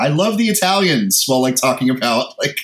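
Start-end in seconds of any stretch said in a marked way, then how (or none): 0.0-1.2 high, mock boozy drunken shouting. Retelling a time they drunkenly shouted at their girlfriend's after-work event, retelling a drunken shout. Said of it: "like shouted".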